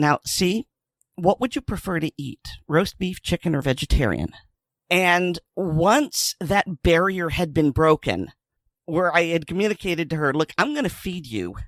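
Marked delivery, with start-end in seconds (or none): 0.0-4.3 mock sugary, coaxing, honey-sweet tone. Crouching down beside her, retelling asking her a question in a sweet honey voice. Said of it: "in my best, okay, honey voice".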